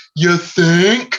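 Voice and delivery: loud, high-pitched yell. Retelling a dude at the very back of a show: imitating someone yelling. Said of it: "just yells".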